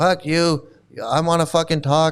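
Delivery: normal talking voice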